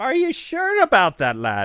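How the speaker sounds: horrible fake Irish accent, swooping. Speaker acting out a reply to people asking if they're Irish, horrible Irish accent. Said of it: "my Irish accent is horrible".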